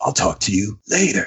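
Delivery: rasping, weighty screen-actor voice with gravitas. Imitating the voice of an actor praised for his on-screen gravitas: raspy voice impression. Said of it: "that raspy".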